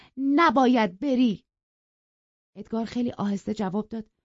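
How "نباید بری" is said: forceful, firm, loud, raised insistent voice. A woman stops a man trying to leave past her at the door, firm and loud. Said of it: "کاترین محکم و با صدای بلند گفت".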